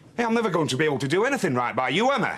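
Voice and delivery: loud, heated, angry voice. Answering a partner's complaints in public, in a raised voice. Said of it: "Will you keep your voice down?".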